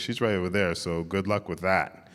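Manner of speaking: ordinary delivery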